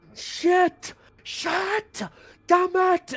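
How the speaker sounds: screaming, very high and dragged out. Voicing a captive who realizes he is powerless: screaming curses. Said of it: "he's just screaming as he realizes".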